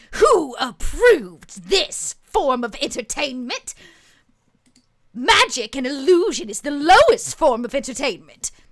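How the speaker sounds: furious, very loud angry outburst. In a story, a voice interrupts a magic show: angry voice. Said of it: "An angry voice rings out".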